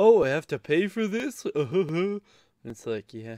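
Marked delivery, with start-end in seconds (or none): 0.0-1.4 very loud, high, super sarcastic tone. Complaining about annoying people, imitating their super sarcastic remarks. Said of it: "say super sarcastic crap like".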